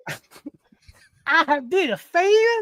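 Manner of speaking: put-on Southern accent. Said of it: "that's like Southern".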